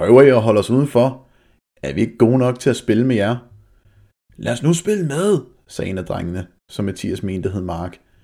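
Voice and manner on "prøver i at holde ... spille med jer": voice slightly raised, just a notch. The group's leader confronts two boys who want to go home, raising his voice slightly. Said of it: "sagde Pierre og hævede stemmen en smule".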